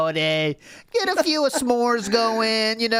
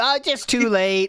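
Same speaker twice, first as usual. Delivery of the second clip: ordinary talk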